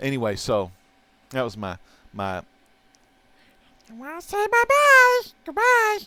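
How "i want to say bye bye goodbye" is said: very high, slow, loud, drawn-out puppet voice. Speaker shows an Elmo Funko Pop, doing an Elmo impersonation. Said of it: "This is my Elmo impersonation".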